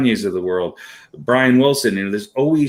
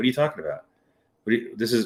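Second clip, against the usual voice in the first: mock bone-dry delivery, no hint of joking; 8 dB quieter than usual. Retelling a player's answer to a question about his beard: imitating a deadpan reply. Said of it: "him just deadpan and going".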